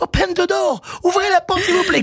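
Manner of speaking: mock frantic, very high panicked shout. Retelling the champions stuck in the broken lift, imitating panicked shouting. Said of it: "ils crient please help".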